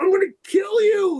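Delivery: mock furious outburst, pitched very high. Retelling ripping down an embarrassing photo: retelling own furious threat. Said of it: "I was so furious with him".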